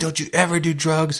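put-on very high, angry screaming. Retelling the car ride home as dad screamed at the speaker, imitating dad screaming. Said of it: "he's like screaming at me".

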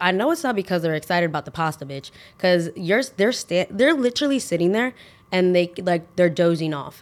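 plain

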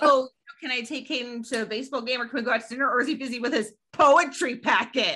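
play-acted sneering, mocking, sarcastic tone. Speaker retells a co-parent mocking the kid's homework, retelling a mocking tone. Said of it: "he started saying it in a mocking way".

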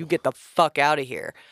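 put-on angry, outburst-like voice. Retelling ordering a shadow out of the room: imitating own angry words. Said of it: "I got pissed".

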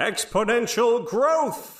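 very high, theatrical, dramatic knight voice. Taking turns doing impressions from the episode, doing a dramatic Bucket Knight voice. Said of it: "how dramatic the Bucket Knight's voice was".

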